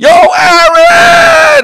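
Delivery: very high, loud, drawn-out yell, belted out.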